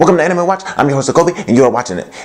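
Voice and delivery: rapid-fire delivery. Host opening an anime show episode, talking very fast. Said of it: "why I'm talking so fast".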